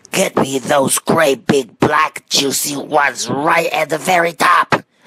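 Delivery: hollering. An old man under a cherry tree calls up to the gardener on the ladder: shouting. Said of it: "the old man was shouting".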